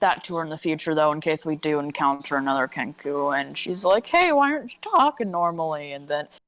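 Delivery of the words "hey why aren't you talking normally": accidental voice crack midway. Quoting what she might ask in the future, with an accidental voice crack. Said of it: "that voice crack was not in character".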